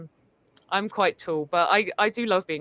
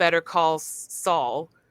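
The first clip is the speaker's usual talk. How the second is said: speaking with an American accent. Saying the show title Better Call Saul in an American accent. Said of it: "with an American accent it's like Better Call Saul".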